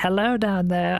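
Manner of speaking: high, put-on shouting call. Retelling a clip, pretending to yell down a well. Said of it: "he's yelling down a well".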